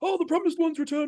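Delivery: rousing crowd cheer. Retelling a film scene where townspeople greet a returning hero: imitating townspeople shouting. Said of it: "they're all, like, shouting".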